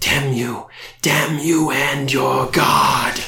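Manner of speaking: ghoul voice, rasping, pained, furious cry. A ghoul whose sarcophagus was destroyed cries out, raspy cry of pain and anger. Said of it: "the ghoul raspily cries out in pain and anger".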